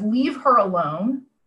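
ordinary talk

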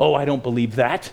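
put-on dark, sinister voice. Retelling an elderly lady's reply to the gospel: imitating a dark, sinister voice. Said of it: "very dark and sinister sounding when she said it".

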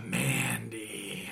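put-on sultry, sexy voice, very low and hushed. Narrating who walks out next: put-on sexy voice. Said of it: "That's my sexiest voice".

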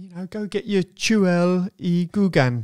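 botched Welsh accent with Cockney mixed in. Guessing what a Welsh phrase means, in a bad Welsh accent attempt. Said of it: "I've probably got the accent completely wrong with a bit of Cockney thrown in".

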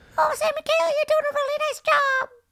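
very high, squeaky cheering voice. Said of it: "they're super high-pitched voice".

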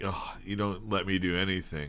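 put-on mumbling, very quiet. Recapping a scene, imitating Croker mumbling under his breath. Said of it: "mumbles under his breath".

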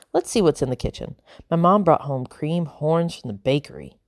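ordinary delivery, nothing marked

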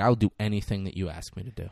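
low, dead-serious voice, meaning every word. Retelling a movie scene, quoting the rookie's answer: serious Ethan Hawke delivery. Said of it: "gets real serious".

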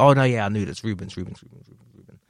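exasperated, annoyed, angry repetition. Retelling how a relative keeps misnaming him: imitating someone angry and frustrated. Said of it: "he's angry".

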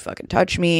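ordinary talk, nothing marked

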